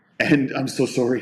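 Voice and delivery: ordinary talk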